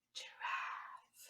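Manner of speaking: soft whisper.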